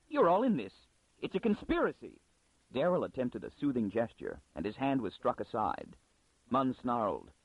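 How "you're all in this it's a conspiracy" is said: high, abrupt, suddenly certain and convinced. A librarian who has just been told the truth turns on the others, sudden conviction. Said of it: "With sudden conviction".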